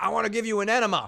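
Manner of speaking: mock loud, high, wild, out-of-control yelling. Retelling someone yelling at security guards out a car window: imitating Joe yelling. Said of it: "yelling at security guards".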